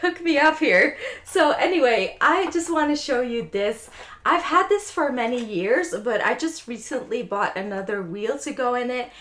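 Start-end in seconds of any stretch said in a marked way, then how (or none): 0.0-1.0 high delivery, chuckling and laughing through the words. Asking a lava lamp brand to sponsor them, laughing while speaking.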